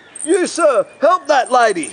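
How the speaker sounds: very high, drawn-out scream at the top of the voice. Telling of someone at the escalator top yelling at him, retelling a scream. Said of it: "I hear someone scream out at the top of their voice".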